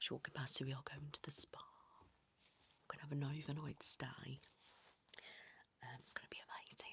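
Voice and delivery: hushed whisper under the breath. Telling viewers about a spa trip while her child walks past, whispering. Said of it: "I'm whispering just in case".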